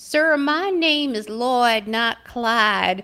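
heavy, stretched-out Texas drawl. Retelling how the grandfather corrected the dad about his name: Lloyd's heavy Texas drawl. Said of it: "poor Lloyd would say with his heavy Texas drawl".

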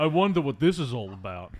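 slow, drawn-out meathead drawl. Retelling a film character's line in a meathead voice: Stallone impression. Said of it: "Why was that your Stallone?".

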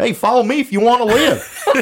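very high, loud Appalachian hillbilly accent. Explaining how he sounds to Austrians, the speaker does a hillbilly Terminator voice. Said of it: "He sounds like a hillbilly".

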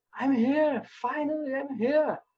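very high, drawn-out, elated joyful scream. Recalling first seeing the club's stadium, the speaker reenacts it: retelling screaming with joy. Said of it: "And then I started screaming".

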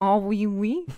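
put-on French accent. Asked by a co-host to imitate someone from France, doing a French accent impression. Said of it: "can you do your best impression of someone from France?".

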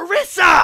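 very high, very loud, shrill shout. Recounting a girl at a film screening calling out a name, imitating a loud shout.

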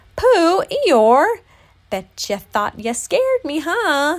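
very loud, high, swooping, thrilled outburst. Just back on his feet after being spooked by two friends, exclaiming excitedly. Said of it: "Exclaimed excitedly".

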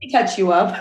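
ordinary talk, nothing marked

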